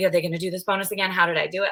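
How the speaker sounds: frantic, alarmed tone. A speaker recounts the night before a beach vacation, retelling her panicked thoughts. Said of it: "I was like panicking".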